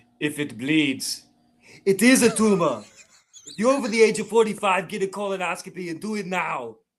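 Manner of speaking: public service announcement voice. Giving a health announcement as Arnold Schwarzenegger. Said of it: "one P S A from Arnold Schwarzenegger".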